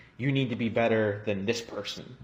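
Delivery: plain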